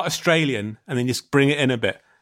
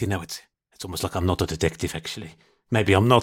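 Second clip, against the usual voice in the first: put-on mutter under breath, much lower; 7 semitones lower, 3 dB quieter than usual. Recounting what a detective muttered as the speaker was leaving, retelling a mutter under breath. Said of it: "I think I heard him saying under his breath".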